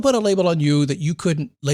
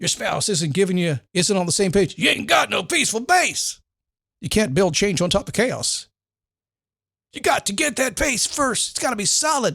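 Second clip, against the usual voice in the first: put-on Southern-style preacher sermon delivery; 4 semitones higher than usual. Giving advice, slipping into a Southern Baptist preacher voice. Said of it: "I'm approaching Southern Baptist minister now".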